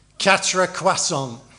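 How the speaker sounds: very loud, deadpan, put-on Lancashire accent. Retelling an uncle ordering at a counter in his best Lancashire accent. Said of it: "with an absolutely dead straight face and his very best Lancashire accent".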